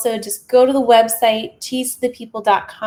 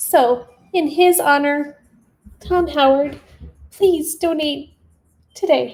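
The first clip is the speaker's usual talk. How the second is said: sobbing, ugly crying, choked-up voice through the words; 4 semitones higher than usual. Honoring a friend who recently passed, asking for donations: ugly crying. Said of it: "sorry, ugly cry".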